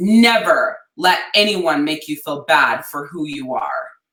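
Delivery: firm, serious, stern scolding tone. Retelling what Dad told the upset speaker: imitating Dad's firm voice. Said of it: "in this, like, really firm voice, as if I was in trouble".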